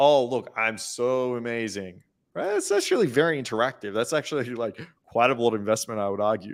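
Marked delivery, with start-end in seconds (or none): 0.0-2.0 mocking, imitated sarcastic tone. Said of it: "in a sarcastic way".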